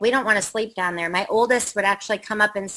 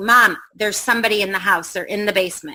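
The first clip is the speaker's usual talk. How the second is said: normal talking voice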